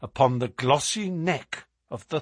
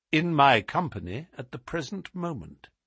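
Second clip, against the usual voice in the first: ordinary delivery, nothing marked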